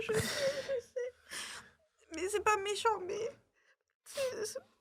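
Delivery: words forced out through tears, very high. Talking with friends about a sister, crying while talking. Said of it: "Arrête de pleurer".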